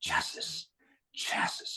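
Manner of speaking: put-on breathy whisper in a French accent on chassis. Speaker retells a voice that said a word twice, whispered French accent. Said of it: "like a whisper, ... but it was in a French accent".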